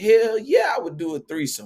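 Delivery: brazen over-the-top joking tone. Retelling own answer to a friend's question: retelling own outrageous joking answer. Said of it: "answered it the most outrageous way that I possibly could".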